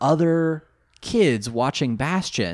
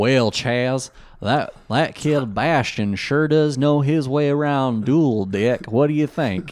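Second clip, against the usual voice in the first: put-on generic Southern accent; 4 dB louder than usual. Quoting a character she finds obnoxious: put-on Southern accent. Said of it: "some amalgamated Southern accent".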